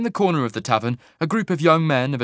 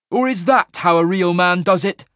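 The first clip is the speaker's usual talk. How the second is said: loud, raised, carrying voice, pitched up; 5 semitones higher, 4 dB louder than usual. After hurling Magebane dead centre, he turns to the watching crowd; asked loudly. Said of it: "He asked loudly".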